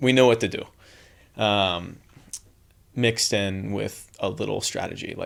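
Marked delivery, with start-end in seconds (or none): 0.0-0.6 put-on Latvian-accented speech. Retelling what Tina said to the team: imitating Tina's Latvian accent. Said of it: "And I said that in the accent".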